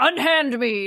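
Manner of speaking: affronted, outraged, indignant exclamation. Retelling a game scene, voicing a character's protest: retelling a character's indignant protest. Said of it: "And he's like".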